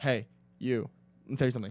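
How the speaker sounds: choppy put-on voice with pauses. Imitating another speaker's mom talking with a lot of commas: imitating mom talking with many pauses. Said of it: "your mom talks with a lot of commas".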